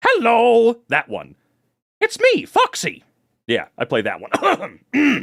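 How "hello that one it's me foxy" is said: very high, loud, swooping, squeaky, sing-song cartoon voice. An actor shows the character they played in the prequel, in Foxy voice. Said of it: "The one who sounds like this".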